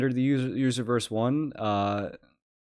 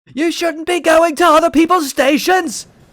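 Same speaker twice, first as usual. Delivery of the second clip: put-on man's scream, much higher and louder; 12 dB louder than usual. Watching a train video, the speaker imitates the man in it screaming. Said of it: "hearing him scream about train".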